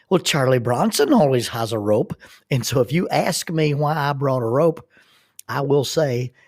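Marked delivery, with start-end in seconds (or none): 0.1-2.1 spoken with an Irish brogue and lilt. Retelling a man answering his partner's question about the rope, in an Irish brogue. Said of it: "he answers in that Irish brogue".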